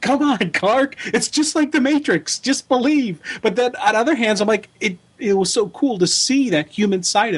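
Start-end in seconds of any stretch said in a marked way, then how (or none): 0.0-3.2 high-pitched yelling. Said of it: "I'm yelling at the T V going".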